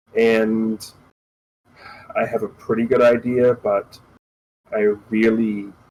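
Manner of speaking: depressed voice. A character answers after being informed of a problem, depressed voice. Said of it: "like he sounds depressed about it".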